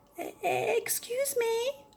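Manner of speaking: tiny, very small, very high, soft little voice. Narrator reading Basil speaking to the monster; very small voice. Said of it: "in a very small voice".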